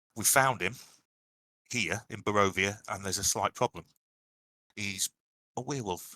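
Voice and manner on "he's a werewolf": said very, very quietly, hushed. Revealing in character that a companion is a werewolf: said very quietly. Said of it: "I'll say very, very quietly".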